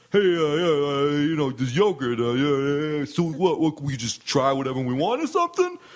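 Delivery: fake, halting New York accent. Imitating a man who isn't really from new york: phony new york accent. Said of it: "this is the way his voice fucking sounded. I'm trying to do it dead on. ... He's got the phony accent".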